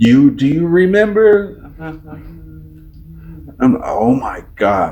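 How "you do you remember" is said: put-on piping, loud child voice. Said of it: "they'll be like".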